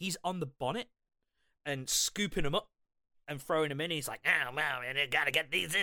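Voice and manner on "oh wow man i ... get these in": silly put-on cartoon sailor voice. Describing a guy on the bonnet scooping things up, Popeye impression. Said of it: "Every time you do this impression".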